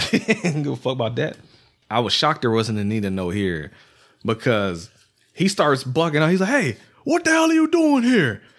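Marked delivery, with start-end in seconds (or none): 6.5-8.4 shrill, very high, swooping, half-shouted near-yell. Recounting a filmed scene, quoting a man who almost seems to yell at her. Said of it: "You almost think he's yelling at her".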